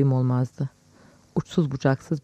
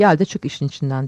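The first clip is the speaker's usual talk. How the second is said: ordinary delivery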